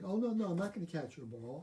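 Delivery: ordinary talk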